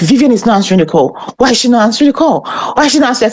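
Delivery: play-acted frantic, fast, rushed, panicked fretting. Imitating a newly hired nurse panicking over an unanswered call: imitating someone panicking. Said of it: "So she's always panicking".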